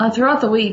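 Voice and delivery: ordinary talk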